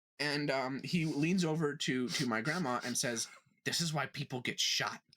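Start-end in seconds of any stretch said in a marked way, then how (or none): 3.7-5.0 mock loud whisper, much lower. Retelling a man in a T-Mobile line leaning over to the speaker's grandma, loud would-be whisper. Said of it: "He thinks he's whispering this, but he's not".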